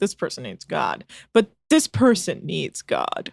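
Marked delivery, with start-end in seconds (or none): 0.0-1.0 low, soft, offhand throwaway delivery. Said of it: "I've never been like".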